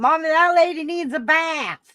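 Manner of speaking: put-on very high, tiny toddler voice. Retelling what a three-year-old used to say, imitating a small child. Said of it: "she was doing it at three".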